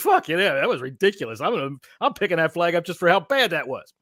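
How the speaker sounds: disgusted, incredulous manner. Doing an impression of referees in a huddle on that play: imitating a shocked referee. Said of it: "here's my impression of the huddle of referees".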